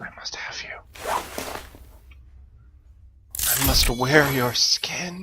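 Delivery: hushed, soft, breathy, creepy whisper. A player setting up armor in a game speaks in a serial killer voice. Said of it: "now I sound like a serial killer".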